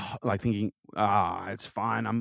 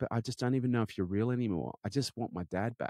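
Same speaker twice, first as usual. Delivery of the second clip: mock-distraught child voice, quieter; 6 dB quieter than usual. A father retelling what his son said after the stroke, imitating a distraught child. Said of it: "he was just beside himself".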